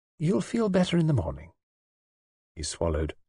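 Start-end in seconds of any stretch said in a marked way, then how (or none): 0.2-1.5 composed, calm, matter-of-fact tone, pitched up. Narrator reads the nurse's reply to her angry patient, calm. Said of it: "She said calmly".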